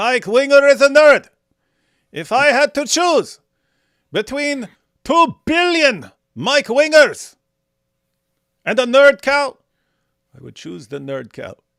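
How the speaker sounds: shrill, booming, sing-song, silly put-on drawl. Asked to say it in his voice, the speaker uses a put-on imitation voice. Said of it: "you mean like like in his voice? ... Like that".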